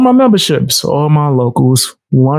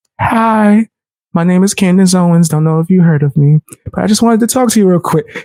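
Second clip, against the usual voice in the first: put-on sweet voice, higher pitched; 4 semitones higher than usual. Joking about Candace Owens confronting someone, the speaker does a sweet-voiced Candace Owens impression. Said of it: "came with the sweetest voice".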